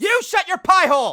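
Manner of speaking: shouting. Answering a teasing remark about pants: yelling. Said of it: "Evan, will you stop yelling?".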